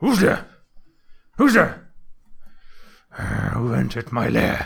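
weird growling creature voice, loud and swooping. Describing entering a room, speaker voices the weird voice heard there, growly. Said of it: "a weird like growly voice going like".

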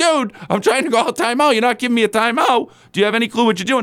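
high, heated, enraged yelling rant. Retelling a coach yelling at the ref over a denied timeout: imitating Chauncey Billups yelling. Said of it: "he starts yelling".

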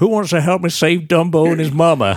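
put-on terrible dodgy Southern US accent, very high, loud. Recalling a scene from the Dumbo film, imitating Colin Farrell's terrible Southern accent. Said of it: "in his terrible southern accent goes like".

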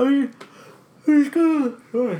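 talking through a yawn. Mid-conversation about breaking into an old mall, talking through a yawn. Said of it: "Sorry, I'm yawning".

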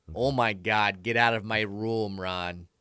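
put-on Milwaukee accent. Retelling a roommate shouting to leave his room, Milwaukee accent. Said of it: "Is that what Milwaukee sounds like?".

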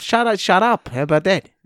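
put-on Australian accent. Telling the co-host to shut up: Australian accent. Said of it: "is that Australian?".

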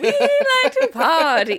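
put-on weird British accent, sing-song and swooping. Imitating a movie character who likes to party: Putnam's weird British accent. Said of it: "he does this weird British accent".

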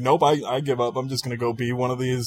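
normal talking voice

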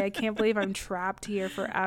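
ordinary talk

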